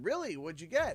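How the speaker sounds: usual speaking voice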